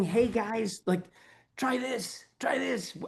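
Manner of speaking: high, mock-innocent voice with keen, eager enthusiasm. Describing sharing movement-training ideas, the speaker acts out past self with mock bright-eyed innocence. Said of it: "I'm like bright eyed, bushy tailed, innocent, saying".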